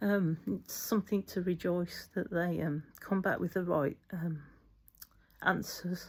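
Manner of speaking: emotional, wobbly, choked-up voice.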